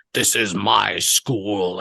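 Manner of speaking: foreboding, ominous, very slow pronouncement. Retelling a movie scene where a character declares ownership: imitating an ominous line. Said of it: "ominously says".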